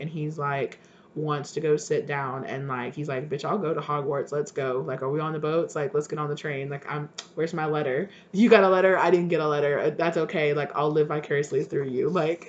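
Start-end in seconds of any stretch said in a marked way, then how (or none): none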